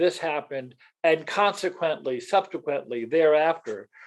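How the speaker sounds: usual speaking voice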